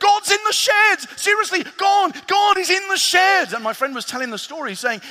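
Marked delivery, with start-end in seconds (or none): 0.0-3.5 shrill, very loud, high, slow, drawn-out shout. Retelling a man charging out, shouting to people around: imitating someone shouting. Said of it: "he's shouting to the people around".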